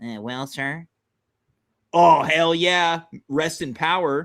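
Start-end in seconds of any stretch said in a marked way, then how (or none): 0.0-0.9 put-on nasal voice, lower and quieter. Doing an impression of a president: nasally George H W Bush impression. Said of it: "He was more nasally".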